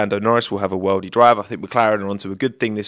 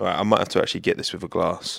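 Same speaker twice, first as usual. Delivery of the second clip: ordinary talk, nothing marked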